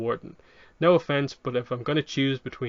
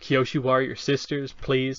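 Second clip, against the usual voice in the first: put-on mocking, sneering tone. Retelling a scene where Biyu scoffs at Suki: imitating a mocking tone. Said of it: "mocking that idea of community".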